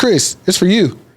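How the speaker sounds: bright, happy, cheerful upbeat delivery. Retelling how the other manager answered the phone: imitating a cheerful voice. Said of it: "He says it like a cheerful voice".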